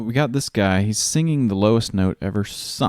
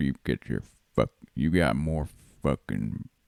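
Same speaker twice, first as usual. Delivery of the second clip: put-on low, manly vocal fry voice; 8 semitones lower, 6 dB quieter than usual. Imitating a movie character who talks with a low, manly vocal fry. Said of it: "he kinda talks like this".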